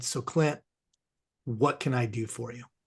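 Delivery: put-on gentle, kindly grandfatherly voice. Retelling what the man said at the end of the call, imitating gentle grandfatherly voice. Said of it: "a very gentle, grandfatherly kind of voice".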